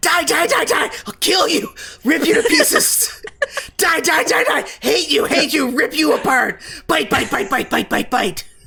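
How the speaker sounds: shrill, screeching, shrieking rat voice, very high. Game master voicing a captured rat screaming inside a bag, screaming rat voice. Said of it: "screams inside the bag in the rat voice".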